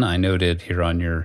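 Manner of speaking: plain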